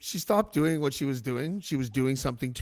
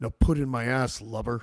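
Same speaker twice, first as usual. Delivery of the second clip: sinister, creepy put-on deep voice; 3 semitones lower than usual. Retelling what a woman said to him, put-on deep voice. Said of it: "she goes like this, ... just the deep voice".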